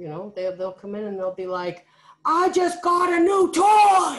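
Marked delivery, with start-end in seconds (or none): 2.2-4.2 mock very loud, very slow angry tone. Imitating a student who always sounds angry, mimicking an angry-sounding student. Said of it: "You sound a little upset by that".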